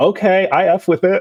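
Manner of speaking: put-on heavy New York accent. Quoting a man from a TikTok video, heavy New York accent. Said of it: "in his very heavy New York accent".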